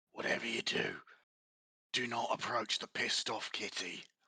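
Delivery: speaking in a hush. A game narrator voices one character grabbing another, in a hushed tone. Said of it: "in a hushed tone".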